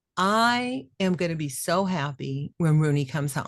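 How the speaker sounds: plain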